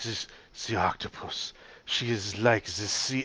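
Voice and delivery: bad, over-the-top fake French accent. Recalling reading aloud during a live performance, horrible French accent. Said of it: "keep doing this horrible French accent".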